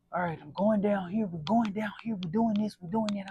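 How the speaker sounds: stern, super serious, grumpy, no-nonsense delivery. Retelling what the speaker's guy said at a workout, imitating someone super serious. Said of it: "he was like super serious".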